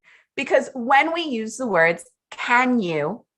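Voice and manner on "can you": rising intonation on "can you". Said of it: "we are bringing in a rising intonation".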